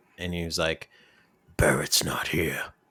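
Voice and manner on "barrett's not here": put-on British accent, lower. Retelling a phone call when someone else answered: imitating a British accent. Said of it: "They're all British, it seems".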